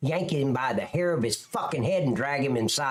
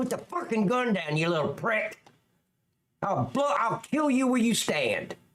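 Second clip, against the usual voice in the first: high, aggressive, all-out yelling; 8 semitones higher than usual. Showing how to talk to someone holding a gun: yelling threats. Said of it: "That's how you talk to 'em".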